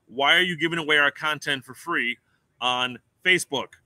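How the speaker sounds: ordinary talk, nothing marked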